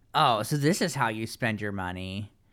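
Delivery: ordinary delivery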